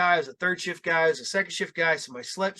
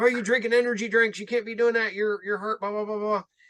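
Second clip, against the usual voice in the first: lecturing, scolding, yelling rant; 4 semitones higher than usual. Retelling a doctor yelling at the boss: imitating someone yelling. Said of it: "he starts yelling at Fred".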